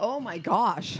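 out of breath. Reacting after a lot of running, out of breath. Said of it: "I'm a lot of breath".

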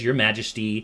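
normal talking voice

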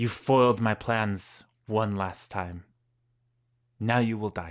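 villain voice with restrained, barely contained rage. Narrating a villain whose plan was foiled, voicing his threat: villain with a hint of rage. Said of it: "a hint of rage".

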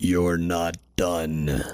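very deep, low, quiet, soft voice. Retelling what the Lord said after the publication shut down: the Lord's deep voice. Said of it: "With probably a much deeper voice".

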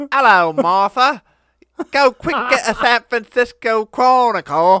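very high, very loud, fake Cockney accent. Doing a bit as an American attempting a Cockney accent: American's fake Cockney accent. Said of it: "an American doing a Cockney accent".

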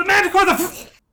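shouting soldier voice. Voicing a soldier in the game who sees the Manticore: soldier yelling. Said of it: "The soldier yells".

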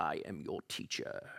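whispered softly and breathily. Framing the author as a wise teacher speaking: James Earl Jones voice. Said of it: "imagine your best James Earl Jones voice".

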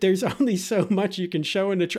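words broken up by laughing. Reading a viewer's comment aloud, laughing while talking. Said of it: "I don't know why I'm laughing".

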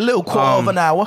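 fake, clumsy, bad put-on English accent. Joking around with the others on the podcast: bad put-on English accent. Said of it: "Your English accent fucking sucks".

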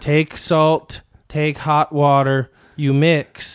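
put-on talking-down tone. Retelling how a clinic worker lectured about gargling: imitating condescending talking down. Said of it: "She was talking down to me like".

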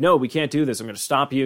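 put-on defiant, confrontational voice. Retelling a cartoon scene, imitating Morty confronting Rick. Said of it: "gets in Rick's face".

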